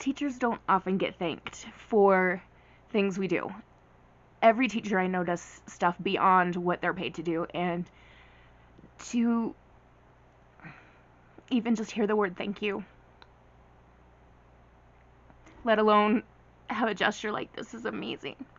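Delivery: crying, tearful speech. Telling the audience a story about being thanked, the teacher is crying while speaking. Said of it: "I really didn't think I was gonna cry when I was telling you guys this story".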